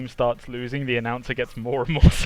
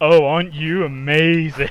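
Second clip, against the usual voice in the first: very slow, loud, drawn-out, mocking sarcastic announcer voice; 3 semitones higher, 6 dB louder than usual. Acting out a game announcer on a kill streak: sarcastic announcer voice. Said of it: "super sarcastic announcer".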